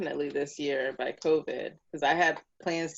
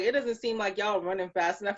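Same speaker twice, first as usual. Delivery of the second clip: ordinary talk, nothing marked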